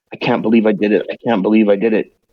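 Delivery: whispered muttering under breath. Voicing a shivering character talking to himself: whispering to himself. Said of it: "he's whispering to himself".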